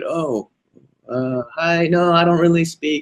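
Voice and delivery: acted timid, faltering, nervous voice, slow and high. Describing language students' fears, acting out a student's reply, imitating a fearful student. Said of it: "most of them have fear".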